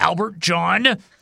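mock delivery through put-on gritted, clenched teeth. Recalling how his mom said his middle name, imitating mom through gritted teeth. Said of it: "she would grit through her teeth".

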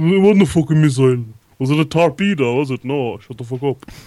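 combative, heated arguing rant. Mocking how liverpool fans argue about a thrown missile: imitating an arguing liverpool fan. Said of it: "My impression of".

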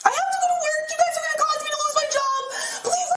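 yelled, screaming, insistent pleading tone. Telling officers she has to go to work, screaming at the top of her lungs. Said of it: "screaming, obviously at the top of her lungs".

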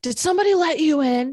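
put-on high, loud shout. Retelling someone on a lower floor calling up: imitating someone screaming.

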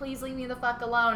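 mock heated, rushed, mild half yell. Speaker recounts a woman answering a man's night calls, retelling someone screaming. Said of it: "screaming at him".

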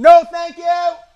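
very high, shrill, very loud scream. Calling out to someone knocking at the door: screaming loudly. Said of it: "I had to scream that so loud".

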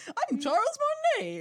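very high, cartoonish video-game voice. Retelling a man who would only speak in the Mario voice, doing the Mario voice. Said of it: "he would only speak in the Mario voice".

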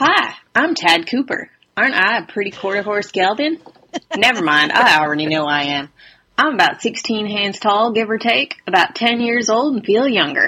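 put-on rusty, out-of-practice Southern accent. Reading aloud a horse-sale ad written from the horse's view, in a rusty southern accent. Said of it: "my southern accent is a little bit rusty".

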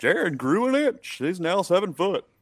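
high, swooping, loud, sing-song cartoon voice. Podcast host sharing an offseason storyline, like a cartoon Disney character. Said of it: "I just sounded like a cartoon Disney character".

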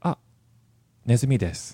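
courteous, polite, plain matter-of-fact delivery. Explaining how to speak to a boss, the speaker demonstrates: politely informing. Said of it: "informing them in this polite way".

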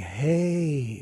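very slow, drawn-out delivery, "hey" stretched out. Retelling a reaction to a home run: Ronald Reagan impression. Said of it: "That was my Reagan impression".

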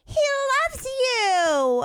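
put-on very high babytalk, "you" stretched out. Retelling what a lady said on a plane just before landing, in a baby voice. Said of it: "I hear this baby voice go like".

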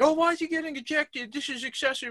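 very high, put-on wailing, crying complaint. Imitating a reporter at the game, imitating someone crying out.

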